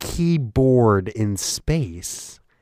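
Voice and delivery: slow, every word stressed on its own. Show a doubting listener how he talks, imitating someone stressing every word of "keyboard in space". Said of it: "he emphasizes literally every word that he says".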